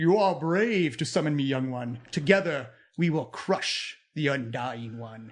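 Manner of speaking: echoing, rumbling spirit voice. A game master voices a spirit rising in the tomb, rumbling voice. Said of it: "A rumbling voice echoes through the tomb".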